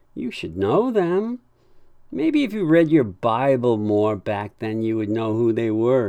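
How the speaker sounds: playful, teasing, sing-song ribbing tone. Ben teases his confused dad, smirking, teasing. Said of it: "he said with a smirk".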